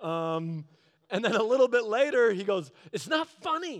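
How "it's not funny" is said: very high, getting-mad, angry, annoyed tone. Retelling a long drive with a coworker who's getting mad: imitating a coworker getting mad. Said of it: "And he's getting mad".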